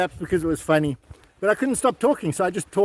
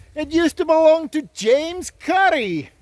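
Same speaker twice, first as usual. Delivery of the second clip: bad, very high, put-on Scottish accent; 9 semitones higher than usual. Introducing Midlands Chimney to viewers, bad Scottish accent. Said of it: "why I'm using a Scottish accent".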